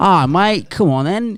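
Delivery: high-pitched attempt at an Australian accent. Asked to give an Australian accent a go, attempted Australian accent. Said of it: "How's that?".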